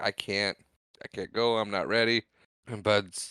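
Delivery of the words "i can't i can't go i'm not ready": ordinary talk, nothing marked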